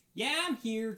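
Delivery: very loud, high-pitched shout from far away. At the scrapyard, someone asks if Betty is there; a voice answers, calling out. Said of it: "a voice call out".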